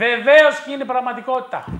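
loud, high-pitched, hyped announcer-style delivery.

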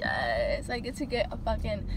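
ordinary talk

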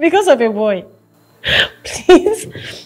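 high, slow speech with laughter through the words. Character on a call with Lola, who is crying over a boy, laughing. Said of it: "I'm not laughing at you".

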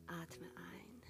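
soft, calm, whispered voice.

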